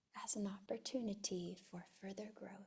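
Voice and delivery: in a whisper. Repeating a phrase after the other speaker, who asks for a whisper, whispering. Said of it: "Now in a whisper".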